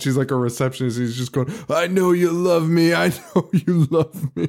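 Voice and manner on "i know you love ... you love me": put-on yelling, repeated over and over. Describing a scene, the speaker imitates a window cleaner screaming at a receptionist. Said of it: "he's screaming".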